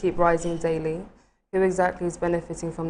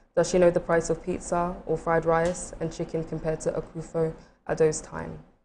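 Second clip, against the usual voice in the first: plain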